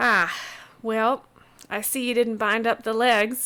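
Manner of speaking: loud, playful ribbing tone.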